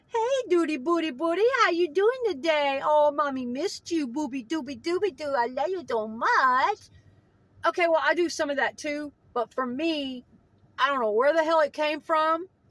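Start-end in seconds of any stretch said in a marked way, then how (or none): 0.1-6.7 put-on doting, high-pitched, cooing baby talk. Showing how one might talk to a pet dog: baby talk to a dog. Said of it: "you might baby talk your dog?".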